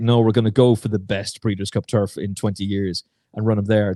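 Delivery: plain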